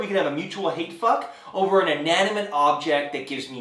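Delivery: ordinary talk, nothing marked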